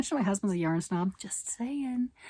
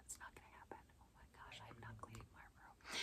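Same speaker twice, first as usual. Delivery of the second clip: put-on breathy, hushed two-year-old tantrum whine; 11 semitones lower, 34 dB quieter than usual. Refusing to clean the room: mock two-year-old tantrum voice. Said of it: "Said in the best two-year-old tantrum voice ever".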